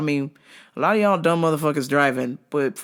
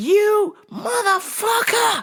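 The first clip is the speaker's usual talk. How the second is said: enraged cursing with voice very high. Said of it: "And he's just like".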